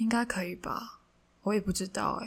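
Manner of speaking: casual, noncommittal, offhand, unsure tone. Retelling his reply when asked about writing in English, imitating his tone. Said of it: "我是模仿他他当时的那个语气跟语调。".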